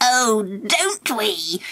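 wicked, cackling witch-like voice. Narrator reads Angela's reply to the storyteller, with a wicked witch-like cackle. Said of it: "said Angela wickedly, cackling like a witch".

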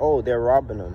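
low, flat, emotionless put-on deadpan, no surprise. Repeating exactly what the man recording said, imitating a deadpan, emotionless remark. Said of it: "I'm going to say it in the same tone".

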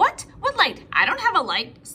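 curt, sharp, snapping tone. Replying to a friend's request at the movies, snapping. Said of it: "snapped Firenze".

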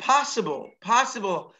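POSSIBLE repeated with a falling stress.

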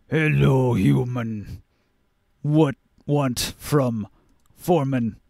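low, deep bass giant voice. Narrating a scene where the giant foreman greets you: deep bass voice. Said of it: "in his deep bass voice".

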